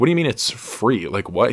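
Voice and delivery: normal talking voice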